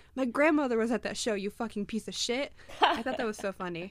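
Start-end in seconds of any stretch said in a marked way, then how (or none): none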